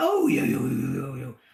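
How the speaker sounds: coaxing, sweet-talking voice. Retelling meeting a confused dog and what they said to it: retelling coaxing a dog. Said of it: "And I went".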